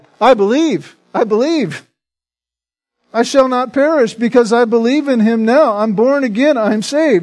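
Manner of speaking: high, loud crying out.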